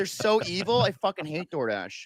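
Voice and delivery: ordinary talk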